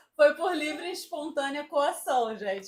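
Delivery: talking while breaking into laughter. Answering who inspired the career, laughing while talking. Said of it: "por isso que eu tô rindo".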